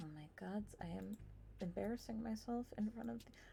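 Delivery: hushed, very quiet, nervous anxious mutter. Tabletop player voices what Beauty is overheard saying, in an anxious voice. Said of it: "it's the anxious voice".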